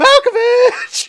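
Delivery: very high, slow, drawn-out scream.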